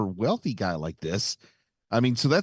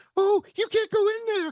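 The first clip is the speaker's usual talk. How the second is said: very high-pitched cartoon mouse voice. Retelling a security guard's line from a scene, in a high-pitched Mickey Mouse voice. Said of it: "he's got the high pitched Mickey Mouse voice".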